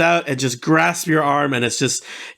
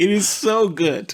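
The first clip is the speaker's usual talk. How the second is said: overjoyed, brimming with happiness, drawn-out gush; 3 semitones higher than usual. Voicing a character greeting a fellow half-elf at a bar: very happy. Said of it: "if he's just this happy".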